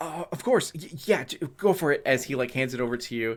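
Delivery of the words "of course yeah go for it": terrified character voice, much higher, slower. Game narrator voicing a man handing the tablet over to the players, terrified. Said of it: "he's already peed himself".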